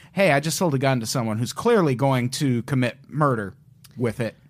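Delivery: ordinary talk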